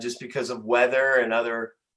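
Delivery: ordinary delivery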